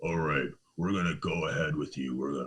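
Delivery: very deep, dropped, low-key voice. Retelling what a man said when he called back, imitating a super deep voice. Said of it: "he has like a super deep voice".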